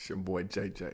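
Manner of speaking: very quiet, hushed voice pushed down very low. Introducing himself on a podcast, dropped low voice. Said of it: "pick your voice back up".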